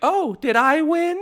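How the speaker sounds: very high, ringing piping voice. Recalling Peach's line after winning a Mario Party mini game, doing a Peach impression. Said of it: "pitched like".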